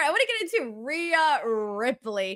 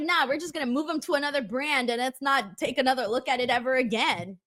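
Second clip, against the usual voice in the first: ordinary talk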